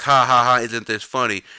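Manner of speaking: put-on mocking laughter. Speaker mocks a brother's YouTube video of him laughing, mocking fake laugh. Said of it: "And then he posted on YouTube laughing".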